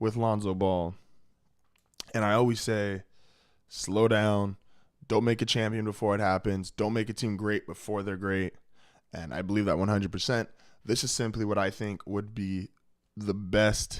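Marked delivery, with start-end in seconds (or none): none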